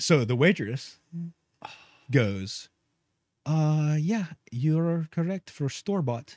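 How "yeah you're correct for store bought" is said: put-on Russian accent, slower. Retelling what the waitress told them, in a Russian accent. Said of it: "Why is she Russian?".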